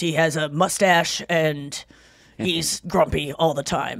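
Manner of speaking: put-on grumpy man's voice. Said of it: "he talks like this".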